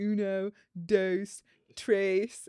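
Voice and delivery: put-on awful anglicized English accent on Spanish words. Imitating the listener counting off for volleyball in Spanish with the worst English accent. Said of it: "say them with the worst English accent ever".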